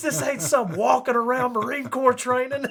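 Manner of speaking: put-on angry scolding. Retelling an instructor scolding a class leader: imitating an angry scolding. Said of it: "cussing up and down".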